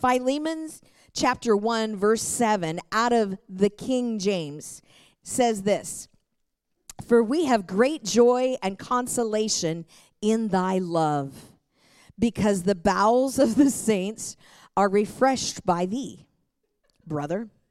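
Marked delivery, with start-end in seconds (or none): 7.1-17.5 reading with stifled, suppressed laughter. Reading a King James verse aloud as an example, trying not to laugh. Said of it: "I'm trying not to laugh".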